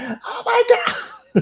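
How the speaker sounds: mock worked-up teen outburst, very high-pitched. Imitating emotional teenagers who can't control themselves: imitating a yelling teenager. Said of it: "they're just yelling at the mic".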